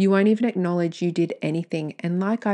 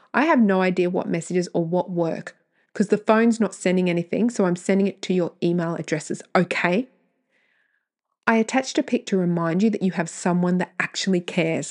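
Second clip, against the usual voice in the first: plain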